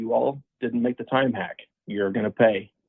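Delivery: ordinary delivery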